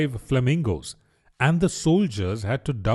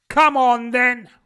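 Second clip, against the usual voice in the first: very high-pitched, loud, shrill roar; 12 semitones higher, 6 dB louder than usual. Reading a story, the queen answers Alice, roaring. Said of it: "roared the queen".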